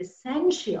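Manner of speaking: heavy stress leaning hard on essential. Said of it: "I stress on this word essential".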